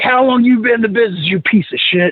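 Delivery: acted-out, yelling, berating voice. Retelling how a man chewed him out in front of everybody, retelling someone yelling at him. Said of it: "he is just yelling at me".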